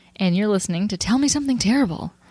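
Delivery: showy game-show host announcer delivery. Finishing the podcast's opening introduction, in a game show host voice. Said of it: "You got very game showy there".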